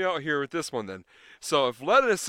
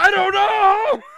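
mock yelling, much higher and louder; 12 dB louder than usual. Quoting what a character yells in a favorite movie scene, retelling a yell. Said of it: "And then he yells".

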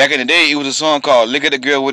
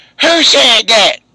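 put-on very high, shrill older lady's voice; 9 semitones higher, 5 dB louder than usual. Retelling how Miss Gush asked who had yelled, imitating Miss Gush. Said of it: "She was like an older lady".

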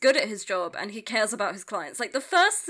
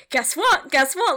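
mock very loud, high outburst bursting with excitement; 6 semitones higher, 8 dB louder than usual. Retelling a tv scene where a partner brings news: imitating someone jazzed. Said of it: "he's so jazzed".

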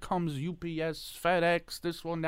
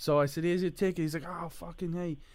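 plain

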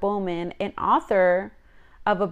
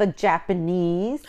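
usual speaking voice

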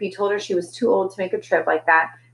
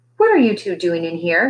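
distrustful, wary, probing, suspicious tone. Florence, standing in the doorway, questions the two in the closet, suspicious. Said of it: "She asked suspiciously".

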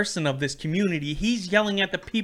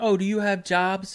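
mock yelling man voice, higher; 3 semitones higher than usual. Retelling what a man was yelling at people, imitating his yelling. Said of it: "he was yelling like".

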